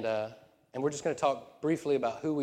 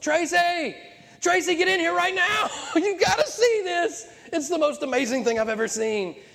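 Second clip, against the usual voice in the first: top-of-the-lungs scream, very high pitched; 8 dB louder than usual. Retelling calling someone into the room to see something, retelling a full-lung scream. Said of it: "I screamed at the top of my lungs".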